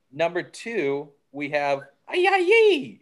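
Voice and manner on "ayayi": very high-pitched, loud shouted yell. Naming player number two, where you have to yell it: yelled name Ayayi. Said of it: "but you have to yell it".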